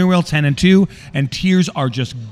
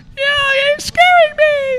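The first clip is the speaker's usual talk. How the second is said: very high, stretched-out, drawn-out scream; 3 dB louder than usual. Retelling his wife's reaction while running red lights, imitating her screaming. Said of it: "my wife is screaming like".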